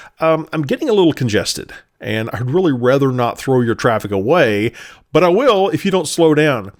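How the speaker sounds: normal talking voice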